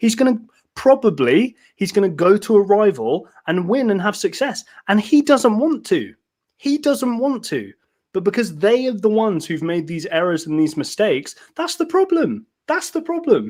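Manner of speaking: excited, voice rising steadily, swooping pitch. Speaker growing excited as he keeps talking: excited, voice getting higher. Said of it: "My voice is getting higher and higher".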